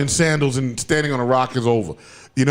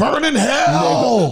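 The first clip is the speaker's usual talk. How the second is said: put-on tough actor voice, pitched higher; 10 semitones higher than usual. Reading a viewer's comment aloud: Samuel L. Jackson voice. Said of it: "in a Samuel L. Jackson voice".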